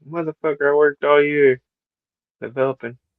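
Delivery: fake tearful, sobbing lament. Imitating the wrestler's creator in the game as he is deleted: imitating someone crying. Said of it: "The guy that created him in the game's crying".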